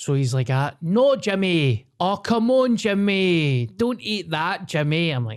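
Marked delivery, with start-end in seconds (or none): 0.5-5.1 put-on Scottish accent, high, slow and drawn out. Retelling a TikTok response, imitating Gordon Ramsay's put-on Scottish accent. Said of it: "put on a Scottish accent".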